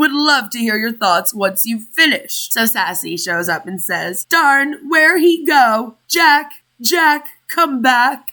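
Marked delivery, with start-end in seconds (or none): 4.3-8.3 slow, drawn-out, long calling-out voice. Reading a commenter's words aloud in a Rose from Titanic voice. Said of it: "in my Rose from Titanic voice".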